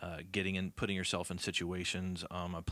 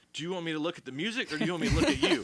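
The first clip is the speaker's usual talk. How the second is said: high, fast, flustered reply. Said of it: "I'm like".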